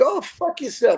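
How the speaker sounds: put-on very high-pitched voice with Yiddish accent. Retelling what a man said during a building inspection, in a Yiddish accent. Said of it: "he had the Yiddish accent".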